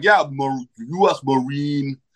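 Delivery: put-on Senegalese French accent. Retelling someone's answer about work in new york, in a french african accent. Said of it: "they have a French African accent".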